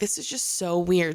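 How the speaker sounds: ordinary delivery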